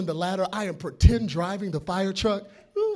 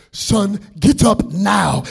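put-on Nigerian accent, spoken slowly; 12 dB louder than usual. Retelling how a man at the fire station suddenly ordered him up, nigerian accent. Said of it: "in his Nigerian voice saying".

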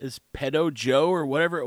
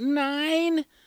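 put-on high-pitched little girl voice. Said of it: "she's like".

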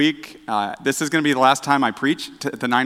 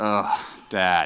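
weary, exasperated groan; 6 semitones lower, 4 dB quieter than usual. Retelling how the family reacts to dad jokes: imitating family groaning. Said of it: "my wife and my children groan".

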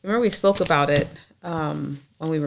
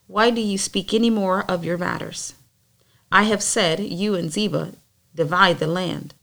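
plain

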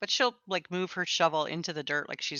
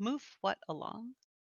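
shy, hesitant, timid, soft, pitched-up voice; 5 semitones higher, 7 dB quieter than usual. Narrating a scene, the storyteller voices her question, timid. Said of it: "she'll timidly ask".

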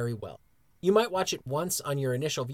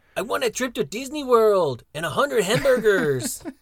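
high, loud, bold, demanding belted voice; 6 semitones higher, 7 dB louder than usual. Sharing a favorite moment from the show, doing a Ramon Alejandro voice. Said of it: "I'm gonna do my best Ramon Alejandro, uh, uh, voice".

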